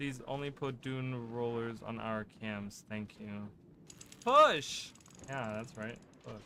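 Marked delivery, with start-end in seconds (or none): 4.2-4.9 very high, very loud, shrill screaming voice. Urging teammates on during a game fight: screaming loudly. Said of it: "I screamed that really loudly".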